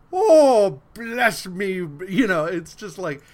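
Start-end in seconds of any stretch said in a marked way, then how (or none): 0.1-1.7 exaggerated loud Irish brogue. Mocking a movie's stereotyped Irish cop, in an over-the-top Irish accent. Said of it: "they're like over the top Irish".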